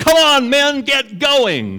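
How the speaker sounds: very high-pitched, loud yell. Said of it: "she's yelling at 'em".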